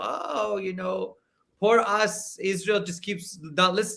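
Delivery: acted, scornful, sarcastic self-pitying tone. Rejecting a claim about Israel, the speaker mocks it: mocking put-on self-pity. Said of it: "I don't buy that this is somehow".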